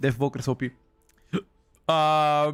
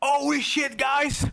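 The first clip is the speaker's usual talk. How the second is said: exaggerated fake excitement, hyped, very high pitch; 12 semitones higher than usual. Imitating how other streamers act, with fake exaggerated excitement. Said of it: "let me try to be a bit fake".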